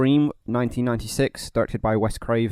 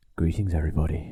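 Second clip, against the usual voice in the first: put-on phone-answering telephone voice, lower pitch; 6 semitones lower, 4 dB quieter than usual. Greeting everybody as the episode opens: put-on phone-answering voice. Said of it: "This is the voice I use when I answer the phone".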